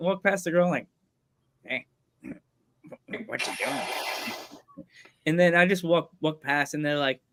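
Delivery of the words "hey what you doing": very hushed, slow, dragged-out whispered cartoon voice. Retelling walking past a girl in the school hallway, Beavis voice. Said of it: "The voice".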